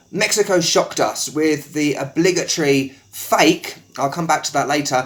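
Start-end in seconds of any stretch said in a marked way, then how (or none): none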